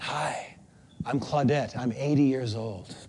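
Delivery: soft, barely there half-whisper. Retelling how a classy woman introduced herself: imitating Claudette's half-whisper of a voice. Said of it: "just whisper of a voice".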